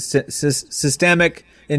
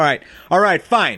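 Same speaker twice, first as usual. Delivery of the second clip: put-on stern dad voice, higher pitch; 5 semitones higher, 3 dB louder than usual. Retelling warning a kid at a theme park: imitating a stern dad voice. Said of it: "that's a good dad voice".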